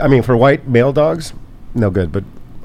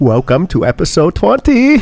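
attempted put-on Hawaiian accent, pitched up; 7 semitones higher, 4 dB louder than usual. Opening episode 20 of a show: attempted hawaiian accent. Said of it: "I was trying to do a Hawaiian accent".

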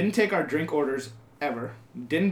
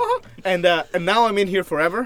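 normal talking voice

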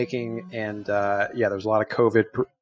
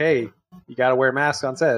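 normal talking voice

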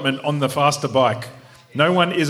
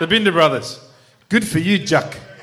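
amateur attempt at a South African accent; 2 semitones higher than usual. Someone asked to do a South African accent, attempting a South African accent. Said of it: "Do it in the South African accent".

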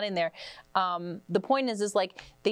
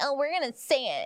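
mocking, pitched-up parody voice; 7 semitones higher than usual. Mocking the show hosts for saying the word: mocking imitation of the show hosts. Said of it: "This is them being like".

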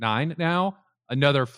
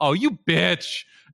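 sudden, unfiltered, pitched-up blurted exclamation; 5 semitones higher than usual. Retelling a finale moment when chickens were brought out: imitating Katya blurting too loudly. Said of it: "you hear Katya way too loudly go".

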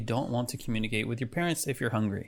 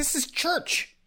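put-on scolding voice, higher in pitch. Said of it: "Kind of in that voice".

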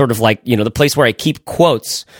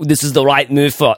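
poorly faked Austrian accent. Speaker in a group discussion attempts a bad Arnold impression. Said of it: "that was bad".

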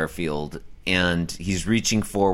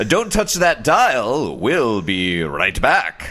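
slow, swooping 1940s mid-Atlantic newsreader voice; 5 semitones higher, 5 dB louder than usual. Asked by the other speaker to read a line as a 1940s mid-atlantic news reporter. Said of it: "could you read that in like a 1940s, like mid-Atlantic, like news reporter".

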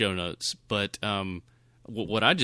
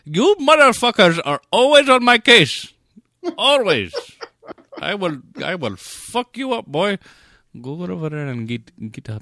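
put-on shrill, loud yelling in an Indian accent; 10 semitones higher, 10 dB louder than usual. Imitating a director once the cameras are off: M. Night Shyamalan, Anglo voice dropped. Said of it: "takes the regular Anglo voice away".

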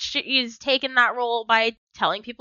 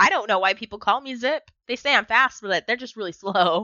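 ordinary talk, nothing marked

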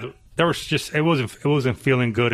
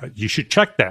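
put-on very serious voice, lower; 3 semitones lower than usual. Retelling a phone call about a motor that won't start: very serious Doug Darby voice. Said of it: "in a very serious Doug Darby voice".

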